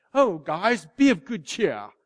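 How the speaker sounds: plummy, upper-class, posh British aristocrat accent. Explaining an old saying, imitating how a british aristocrat would say it. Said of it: "it sounds like he's like some British aristocrat".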